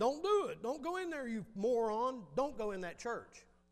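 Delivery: put-on high-pitched scolding yell. Retelling a joke where a wife yells at the TV: imitating wife yelling at TV. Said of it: "she starts yelling at the T V".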